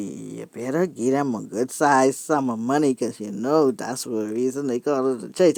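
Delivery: imitated under-breath mutter. Retelling a remark to a husband in church: imitating own under-breath speech. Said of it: "I speaking under my breath now".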